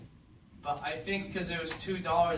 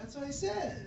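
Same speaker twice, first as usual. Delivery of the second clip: very high-pitched, barely audible, too faint to hear; 12 semitones higher than usual. Answering a math question in a group: too quiet to hear. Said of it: "We can't hear you".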